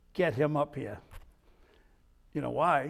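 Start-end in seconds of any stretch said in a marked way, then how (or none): 0.1-0.9 speaking loudly. Retelling the captain's order on the plane: imitating captain speaking loudly. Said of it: "I hear the captain loud say".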